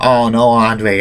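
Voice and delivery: sobbing, crying, weepy wail. Retelling a wrestling segment, imitating Hulk Hogan crying. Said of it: "And Hogan was crying".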